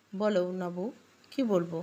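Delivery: plain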